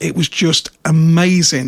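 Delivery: ordinary delivery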